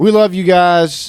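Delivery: high, slow, loud country drawl. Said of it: "I'm getting my country voice out a little bit".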